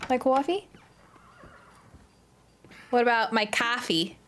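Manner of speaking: put-on Boston accent. Out buying things, the speaker tries out a fake Boston accent. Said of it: "You don't like my fake Boston accent?".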